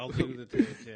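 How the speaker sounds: very loud, very high-pitched sarcastic voice. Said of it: "why are you saying that sarcastically".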